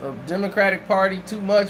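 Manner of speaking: ordinary talk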